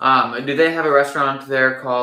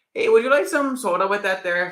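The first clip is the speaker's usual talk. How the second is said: put-on Minnesota accent; 7 semitones higher than usual. Joking that Minnesotans have a strong accent, imitating a Minnesotan accent. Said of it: "they're always talking like".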